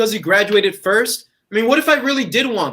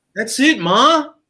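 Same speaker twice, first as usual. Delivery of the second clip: voice lifted, louder; 4 semitones higher, 3 dB louder than usual. A son answers his mother's questions: raised voice. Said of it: "Don't raise your voice at your mother".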